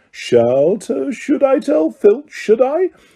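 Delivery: sweet innocent saintly tone. Reading a story aloud, a poltergeist threatening to tell: saintly voice. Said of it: "said Peeves in a saintly voice".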